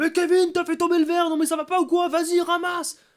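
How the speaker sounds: very high, very loud, shrill scolding shout. Showing how one might react to a child who dropped a glass, shouting at him. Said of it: "lui crier dessus en disant".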